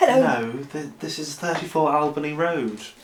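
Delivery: put-on extra-sweet, extra-nice polite voice. Showing Dad the nicest voice to put on for the recording, nicest voice you can. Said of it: "can you put on like the nicest voice".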